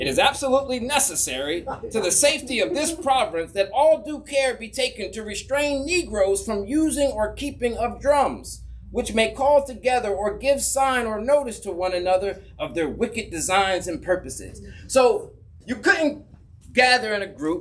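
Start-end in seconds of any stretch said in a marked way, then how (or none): none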